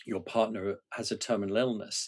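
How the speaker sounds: normal talking voice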